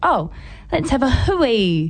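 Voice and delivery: light, offhand joking, hui drawn out. Speaker retells what she jokingly said while they talked: retelling her joking remark. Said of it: "She kind of jokingly just went".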